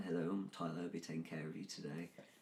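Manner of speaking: hushed, quiet, soft put-on British accent. Retelling greeting a table as their waiter, in a british accent. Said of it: "speak in a British accent".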